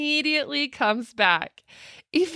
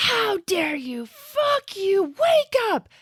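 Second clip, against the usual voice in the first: put-on high, drawn-out furious yell at full volume; 7 semitones higher than usual. Recounting a coding patient's wife brought in to say goodbye, retelling a wife's furious yell. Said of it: "starts yelling at him at the top of her lungs".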